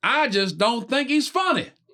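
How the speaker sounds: very high, slow, broad country drawl. Retelling what a lady in the crowd said: super country voice. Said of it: "some lady, super country".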